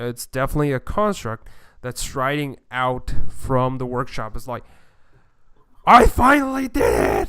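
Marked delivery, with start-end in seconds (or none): 5.9-7.3 very loud, worn-out, shrill, high-pitched yell. A game master voices a gnome striding out on a clockwork spider: loud, tired yell. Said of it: "a loud, tired voice kind of yelled".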